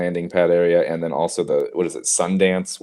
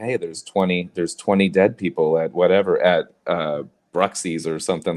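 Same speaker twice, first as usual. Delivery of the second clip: normal talking voice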